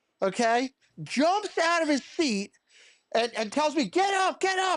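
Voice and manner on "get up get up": screaming, higher pitched. Retelling how a doctor jumped up during a consultation: imitating a doctor screaming. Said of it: "He's screaming at me".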